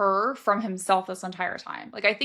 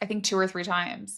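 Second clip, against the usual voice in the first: normal talking voice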